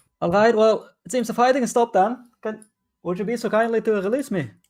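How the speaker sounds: shrill, very high dwarf voice, shouting. Voicing a dwarf whom the other players hear, shouting. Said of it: "you hear him shouting like".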